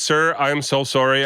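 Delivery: ordinary talk, nothing marked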